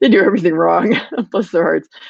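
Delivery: talking with a light chuckle.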